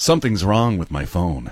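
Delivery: laid-on, cheesy pickup-line voice. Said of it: "why do I do it in that voice".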